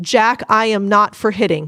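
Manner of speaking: plain, direct, firm, clear tone. Demonstrating a response to someone hitting, clear and attention-catching. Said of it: "with a firm tone, very clear that you need them to listen".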